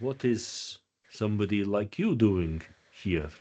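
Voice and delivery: low, dropped, hushed voice. Voicing a character who questions a visitor: voice drops low. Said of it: "his voice drops once more".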